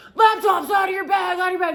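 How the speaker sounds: in-your-face, high, loud, barked screaming. Retelling how airport agents bark orders: imitating a screaming TSA agent. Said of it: "screaming in your goddamn face".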